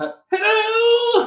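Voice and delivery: put-on voice, very high, slow and loud.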